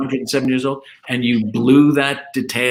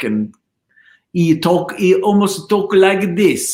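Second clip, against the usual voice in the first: put-on comic Italian accent, higher, slower; 6 semitones higher than usual. Describing a man who didn't speak much English: imitating comic Italian accent. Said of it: "his Italian accent was almost like".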